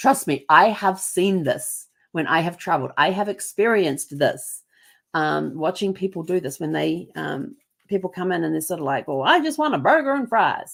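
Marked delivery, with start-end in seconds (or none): 9.1-10.8 fake American accent, pitched up. Telling about travelers abroad, quoting one ordering food, imitated american accent. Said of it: "I don't know if that accent was very good".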